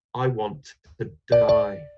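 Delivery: slow voice with a sigh carried into the words. Narrator reads a line after divorce is mentioned in the car, quiet, sighing voice. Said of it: "I sighed and said in a quiet voice".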